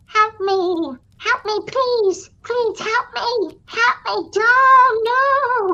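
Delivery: very high, thin, slow, drawn-out wailing cry. Retelling the end of the old movie The Fly: imitating the fly's cry in The Fly. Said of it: "And at the end you hear".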